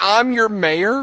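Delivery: very high-pitched screaming. Retelling how an arrested mayor protested to police: imitating someone screaming. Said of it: "he's screaming".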